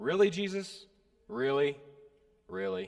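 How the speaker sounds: kind of sarcastic tone. Retelling the disciples' reply to Jesus: imitating sarcastic disciples. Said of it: "Their response is kind of sarcastic".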